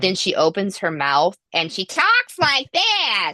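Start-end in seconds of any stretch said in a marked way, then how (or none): 1.5-3.3 very high, shrieking voice, swooping around. Showing how a gorgeous actress sounds once she opens her mouth, in a high, shrieking Judy Holliday voice. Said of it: "it's high, it's it's shriek".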